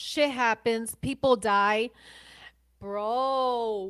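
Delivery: agitated, loud, very slow, with bro drawn out. Reacting to another speaker's account of calling the Coast Guard: agitated. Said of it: "let me calm down".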